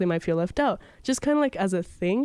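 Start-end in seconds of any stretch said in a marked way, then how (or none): none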